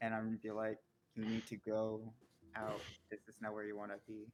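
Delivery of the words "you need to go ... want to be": soft half-whisper, like an inner voice. Player in a game half-whispering into someone's ear, half-whispering like his subconscious. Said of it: "I'm gonna whisper to him like I'm his subconscious".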